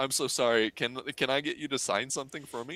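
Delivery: put-on voice catching, choked up with emotion. Retelling asking a favorite actor for an autograph: retelling choking up. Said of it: "I started choking up".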